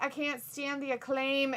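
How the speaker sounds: ordinary talk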